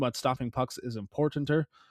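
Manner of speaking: ordinary talk, nothing marked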